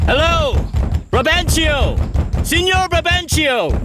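trembling, high, quaking, desperate cry. Calling out at her father's house, the speaker gives a quaking desperate yell. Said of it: "with your most quaking voice, desperate yell".

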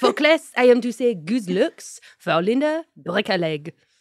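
put-on French accent. Retelling a video of a French exchange student: imitating a French exchange student. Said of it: "he imitates a French exchange student".

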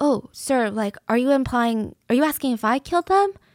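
put-on polite, respectful tone. Acting out answering a police officer the proper way: imitating polite respectful questioning. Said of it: "maybe the proper way if a police officer".

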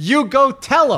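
loud, very high shout, called over a distance. Retelling how a man shouted back from thirty feet away: retelling a shouted reply. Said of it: "he shouted back".

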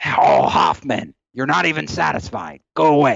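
rough, creaky, dismissive voice. Retelling a meeting in the boss's office, imitating Chuck. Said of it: "Sends me away".

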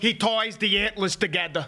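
put-on New York accent. Speaker imitating a kid he had a beef with, in a New York accent. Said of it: "To his New York accent".

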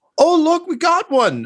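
very high-pitched, shrill holler. As Hildegard, just before a lasgun round hits your head, Hildegard yelling. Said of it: "Hildegard just yells".

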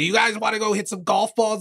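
very high, silly, goofy put-on Boston accent. Retell a man's bit from a very funny clip, imitating a goofy boston voice. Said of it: "he does this voice that's like it's kind of like a Boston voice".

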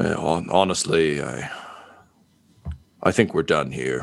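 grim, dark chuckle. A character answers the player before handing over his gun; grim chuckle. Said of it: "He chuckles grimly and says".

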